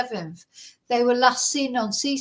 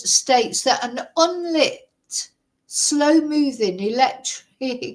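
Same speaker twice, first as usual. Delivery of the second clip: speech breaking up with laughter; 2 semitones higher than usual. Reading a tabloid's claim aloud and finding it ludicrous, laughing while talking. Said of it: "sorry, I'm laughing".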